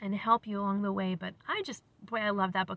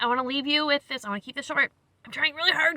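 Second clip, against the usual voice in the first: hurried, quick, louder speech; 6 semitones higher, 7 dB louder than usual. Wrapping up before introducing a video, talking fast. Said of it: "Can you tell I'm talking fast?".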